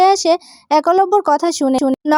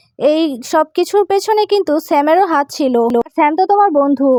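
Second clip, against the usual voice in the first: plain reading voice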